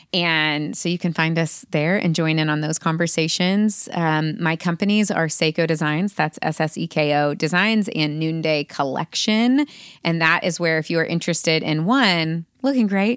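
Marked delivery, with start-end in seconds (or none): 12.7-13.2 commercial announcer sales voice. Listing what the companies offer: commercial voice. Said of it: "It was like a commercial".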